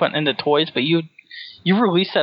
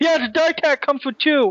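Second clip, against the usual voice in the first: put-on ear-splitting, shrill, very high scream; 12 semitones higher than usual. Recounting a loud video clip, acting out a man screaming. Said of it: "he starts screaming".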